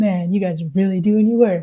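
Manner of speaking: fawning, suck-up flattering praise. Speaker mimics a man fawning over police officers, imitating a suck-up voice. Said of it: "he puts on that like".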